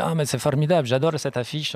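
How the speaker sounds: clumsy put-on Italian accent. Quoting what a man said to him, in a bad Italian accent. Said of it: "j'ai mis mal l'accent italien".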